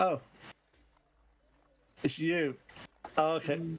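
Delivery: meek, shrinking, sheepish, timid voice. Voicing a clerk who looks up at the arriving party: sheepish clerk. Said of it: "she looks up you sheepishly. Goes".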